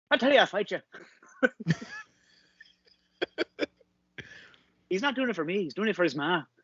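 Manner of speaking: very high, swooping, bouncy Irish boxer voice. Explaining which film character they are channeling, imitating Mickey from Snatch. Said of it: "the bare knuckle boxer".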